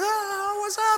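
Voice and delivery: thrilled, excited, very high holler. Recounting a last-second three-pointer, retelling yelling at a pastor friend. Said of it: "I'm like yelling at my pastor friend".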